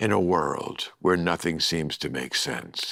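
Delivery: slow, low, big movie-trailer voiceover announcer voice.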